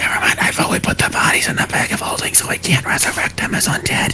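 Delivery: very quiet, hushed whisper. A player's character speaking right into another character's ear, whispering very quietly. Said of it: "I'm whispering it like legit as quietly".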